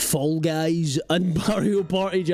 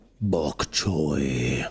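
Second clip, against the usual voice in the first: ominous villain voice, much lower. Imagining bok choy as the bad guy in a food movie: ominous movie villain voice. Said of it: "could be a bad guy".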